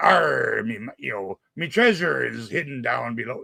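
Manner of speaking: talking like a pirate. Describing a man in a talk-like-a-pirate-day recording, pirate voice. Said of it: "totally talking like a pirate".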